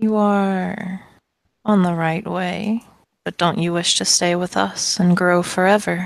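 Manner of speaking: thin, little, wispy tree voice, drawn out. Narrating a game, voicing a tree that answers again, in a little wispy voice. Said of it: "answer again in its little wispy voice".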